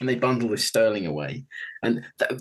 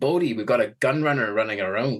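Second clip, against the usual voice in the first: bad put-on Scottish accent. Picturing a figure from the show bursting in: bad Scottish accent as George Jackson. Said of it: "That's not fucking Scottish".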